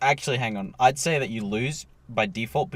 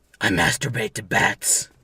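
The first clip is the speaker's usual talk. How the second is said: put-on superhero voice, louder; 2 semitones lower, 4 dB louder than usual. Asked for a Batman impersonation, the speaker tries a line: Batman impersonation. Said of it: "was that your impersonation?".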